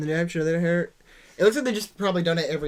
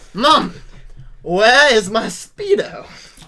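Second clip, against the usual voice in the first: bad put-on British accent, higher and louder; 5 semitones higher, 8 dB louder than usual. Joking about asking Mom where the Speedo is: really bad British accent. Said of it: "That was a really bad British accent".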